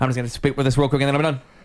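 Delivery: put-on rapid, fast-talking Spanish-speaker manner. Imitating how spanish speakers talk, imitating rapid spanish speakers. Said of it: "talk really quick like this".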